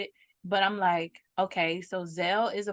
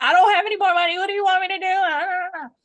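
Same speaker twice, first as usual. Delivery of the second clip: put-on very high, loud, desperate, frantic pleading tone; 11 semitones higher, 8 dB louder than usual. Speaker retells what they said during a payment problem: retelling a frantic emotional plea. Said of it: "I'm getting frantic and I'm like emotional".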